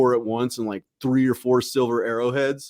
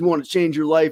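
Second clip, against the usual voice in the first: mock serious military voice, higher; 5 semitones higher than usual. Retelling a scout leader's pitch: imitating a serious military recruiter. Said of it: "he's so serious, too, like a military recruiter".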